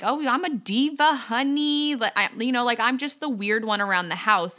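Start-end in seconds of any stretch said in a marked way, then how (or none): 0.0-2.0 put-on goofy yell, much higher, louder. Parent describes being the goofy one around the house with the children: retelling a goofy yell. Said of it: "and I'm yelling and I'm like".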